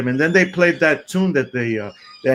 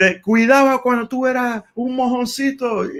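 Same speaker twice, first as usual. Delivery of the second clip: very high, yelled, scolding tone; 9 semitones higher than usual. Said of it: "Machito's yelling at him".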